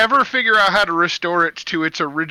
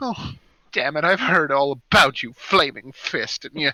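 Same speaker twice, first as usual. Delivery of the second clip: startled, caught off guard, taken aback; 3 semitones lower than usual. A merchant, recognizing the Flaming Fist, reacts taken aback. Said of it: "he's taken aback".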